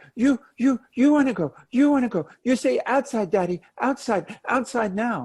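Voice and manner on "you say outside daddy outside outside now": put-on begging, pleading small-child voice. Speaker acts out a child asking daddy to go outside: imitating a small child. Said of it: "That sounds idiotic when you just hear it".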